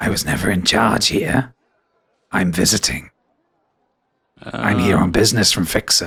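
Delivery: confiding, in-character stage whisper. Voicing Nesson, leaning over to whisper in a player's ear: whispering in character. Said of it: "and whispers in your ear".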